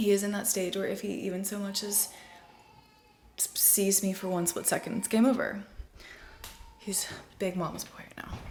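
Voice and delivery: soft, hushed whisper under the breath. Mother talking near her crying baby so he won't notice her; whispering. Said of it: "This is why I have to whisper".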